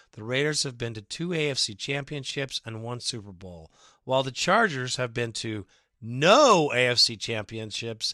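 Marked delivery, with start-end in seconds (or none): none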